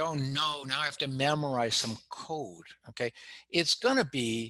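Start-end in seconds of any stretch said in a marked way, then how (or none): none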